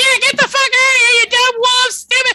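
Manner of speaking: full-blast shriek, very high and very loud. Voicing a companion who joins in scaring off wolves: shrieking at wolves. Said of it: "shrieking his full".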